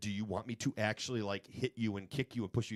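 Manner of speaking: normal talking voice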